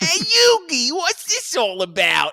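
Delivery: bad New York-Boston accent mix, very high, loud. Imitating how Joey talks while joking about terrible accents, Joey's New York-Boston accent. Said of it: "a mix of like New York, Boston".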